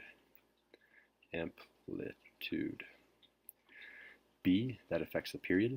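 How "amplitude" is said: very slow, drawn-out "amplitude".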